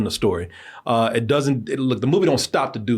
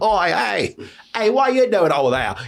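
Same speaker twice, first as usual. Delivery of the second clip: bad, poorly acted put-on Cockney accent, pitched up; 8 semitones higher than usual. Showing how bad actors do a stereotypical cockney accent. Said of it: "she's doing that Cockney accent that, uh, every bad actor does".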